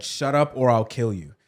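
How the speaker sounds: ordinary delivery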